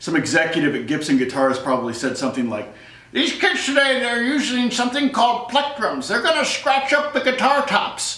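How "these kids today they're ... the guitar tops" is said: high-pitched put-on elderly voice. Imagining what a guitar company executive said, in old man voice. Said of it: "I'm going to use my old man voice".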